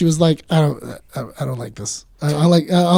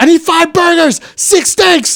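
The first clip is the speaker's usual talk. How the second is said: put-on very high, drawn-out barked yelling; 12 semitones higher, 3 dB louder than usual. Retelling how the game chef called orders: Gordon Ramsay yelling orders. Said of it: "he would yell 'em out".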